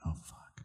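muttered under breath. In character, reacting to bad news: muttered under breath. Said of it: "really quiet, I'd say that".

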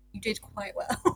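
mock gravely serious, straight, very serious tone. Retelling what was said to Reese: imitating Nancy, very serious. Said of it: "then she very seriously just looked at Reese and went".

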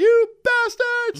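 high, slow, loud, full-volume screaming yell.

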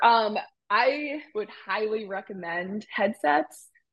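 normal talking voice

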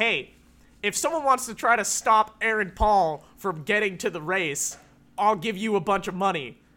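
ordinary talk

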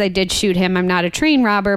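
ordinary talk

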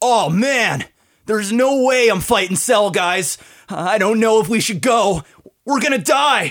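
very high, swooping, loud bro voice, each ha stretched. Answering a request to sample a Yamcha impersonation: Yamcha voice. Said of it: "That's my Yamcha".

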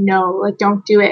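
ordinary talk, nothing marked

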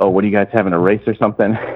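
quick, casual, offhand joking tone. Retelling a remark to cashiers racing at adjacent registers, retelling a jokey offhand remark. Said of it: "just jokingly offhand".

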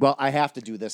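mock angry, pissed-off grumbling mutter. Describing to someone how he sounded doing it, mock-angry grumble. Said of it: "You were just fucking pissed".

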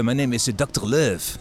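heavy put-on French accent. Speaker describing a film, quoting Jean Reno's character, Jean Reno heavy French accent. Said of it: "met zo'n heel zwaar Frans accent".

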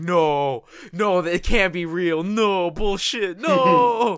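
very slow, loud, high, drawn-out, disbelieving tone. Retelling reacting to a favorite character's death: imitating own past denial. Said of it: "I hated it".

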